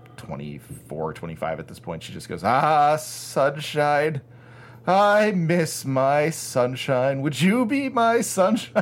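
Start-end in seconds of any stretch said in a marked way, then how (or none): 2.5-8.8 put-on mournful high drunk woman's voice. Retelling a drunk middle-aged woman speaking to the speaker and a friend, imitating her mournfully. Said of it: "she just mournfully says to me".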